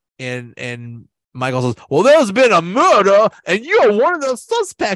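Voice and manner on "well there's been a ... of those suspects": put-on Savannah accent, pitched high and loud. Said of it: "those Savannah accents".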